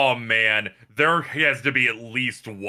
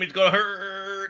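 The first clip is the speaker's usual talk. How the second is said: put-on high babyish voice with "hurt" stretched long; 7 semitones higher, 3 dB quieter than usual. Reading aloud a message Carl typed: imitating Carl's baby talk. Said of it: "he baby talks".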